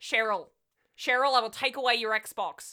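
awkward, clumsy put-on Australian accent. Saying a line to cheryl about her xbox in an awkward australian accent. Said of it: "in, like, a very awkward Australian accent".

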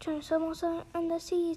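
ordinary delivery, nothing marked

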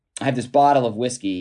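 plain

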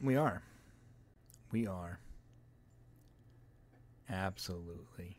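slow, hushed, breathy, sinister whisper. Answering whether they are ready for a news story: put-on creepy voice. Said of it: "That sounded creepy".

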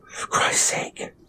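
hushed, whispered mutter under the breath. The narrator speaks within inches of a woman's face, muttered. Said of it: "I muttered".

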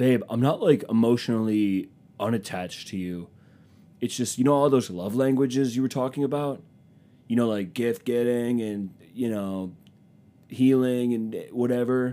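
vague, hedging speech padded with fillers. Acting out a guy manipulating his girlfriend: imitating a manipulative guy. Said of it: "He talks like".

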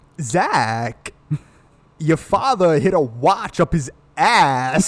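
very slow, stretched-out delivery, each word dragged. Taking a turn doing the best Christopher Walken impression: Christopher Walken impression. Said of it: "my turn".

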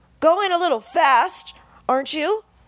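loud, high-pitched yell. Narrator voicing a man yelling at the woman driving the coach, yelling. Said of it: "yelled Mr. Millshark".

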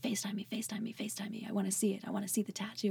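frantic, urgent, insistent, repeated pleading. Retelling a mom who is texting and wants to see a tattoo: imitating frantic mom. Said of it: "texting me frantically".

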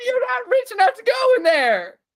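very high, shrill, loud, squeaking yell. Pitching a game idea where a celebrity narrator blocks players: Charlie Day impression. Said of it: "my Charlie Day impression is so good".

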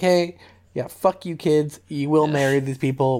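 commanding, bossy fatherly voice. Retelling a scene where the dad orders his kids around: imitating the dad ordering kids. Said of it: "he's just like".

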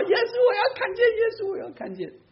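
very high, shrill, joking crying wail. Speaker tells how he jokingly called out after a blind old woman, jokingly mimicking her cry. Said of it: "他跟着那个瞎婆婆后面也这么叫".

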